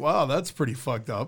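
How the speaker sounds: ordinary talk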